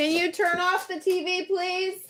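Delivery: very high-pitched voice calling out. Pausing to deal with someone at home, she brings out her mom voice. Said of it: "Let me bring out the mom voice again".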